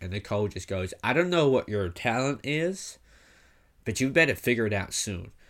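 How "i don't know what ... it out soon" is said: horrendous, deliberately bad fake American accent. Retelling what Nicole said to a man with an old dog, in a horrendous American accent. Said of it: "that was a horrendous American accent".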